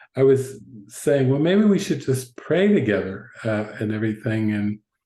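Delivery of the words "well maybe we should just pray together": plain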